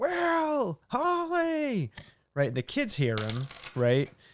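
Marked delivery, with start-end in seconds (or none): 0.0-1.9 put-on scream, much higher. Retelling a show scene where a man waves a torch around; retelling a scream.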